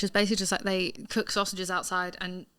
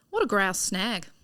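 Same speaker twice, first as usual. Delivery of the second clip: put-on Australian accent. Reading out the week's Australian slang phrase for the other speaker: put-on Australian accent. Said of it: "the accent throws you off".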